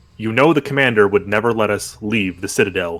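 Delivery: low, quick, dry, expressionless deadpan. Rox looks at the players and answers them deadpan. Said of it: "Rox looks at you deadpan and says".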